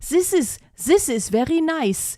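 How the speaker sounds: German accent. Showing how Germans struggle with English TH: German accent. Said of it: "like when a German has to learn the English T H".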